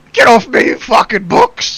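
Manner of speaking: put-on very high, loud old man voice, yelling. Voicing an old man attacked by books in the room: old man's voice yelling. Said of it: "You hear an old man's voice from the room".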